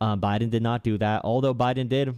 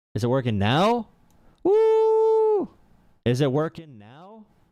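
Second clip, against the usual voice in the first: shrill, very high, loud whooping yell; 6 semitones higher, 3 dB louder than usual. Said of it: "Sorry for yelling".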